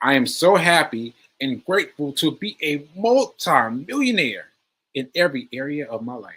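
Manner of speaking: loud, lively, animated, spirited, energetic reading aloud. Reading a line aloud: energetic, lively reading. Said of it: "you got to read this one with, with energy".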